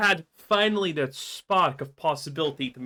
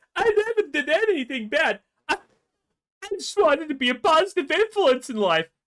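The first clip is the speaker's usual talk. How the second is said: mock crocodile tears, put-on fake crying; 10 semitones higher than usual. Describing a woman's video to listeners: mocking her crocodile tears. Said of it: "crocodile tear video".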